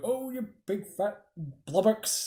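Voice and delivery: high, muttered mumble, half to oneself. Recounting what he would say on the castle tower, retelling a mumble. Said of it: "he would mumble and go".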